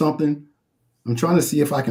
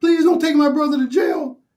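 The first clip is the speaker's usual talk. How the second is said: put-on acted-out very high, tearful, crying child voice; 13 semitones higher, 3 dB louder than usual. Retelling the niece's plea when her little brother was handcuffed, imitating niece crying. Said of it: "and my niece is crying".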